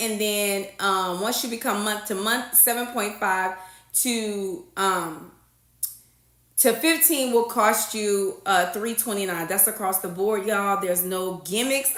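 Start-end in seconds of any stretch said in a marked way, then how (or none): 10.8-11.9 savoring the words slowly. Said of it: "I love to say that".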